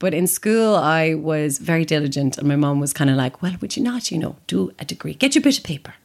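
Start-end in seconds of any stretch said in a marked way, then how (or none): 3.4-5.8 put-on fast, generic Irish mammy accent. Speaker quoting their mum: generic Irish mammy accent. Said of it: "This is a very generic Irish mammy accent".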